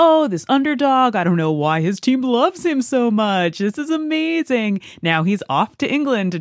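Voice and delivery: news broadcaster delivery. Recounting a news clip that gave away the series: imitating a news broadcaster. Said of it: "the news broadcaster was like".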